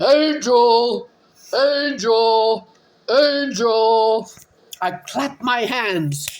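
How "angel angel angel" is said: drawn-out hollering in a put-on man voice. Running around the yard calling a dog, retelling a yell in man voice. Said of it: "yelling Angel's name in my man voice".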